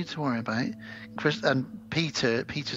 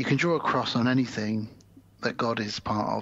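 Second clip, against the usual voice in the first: ordinary delivery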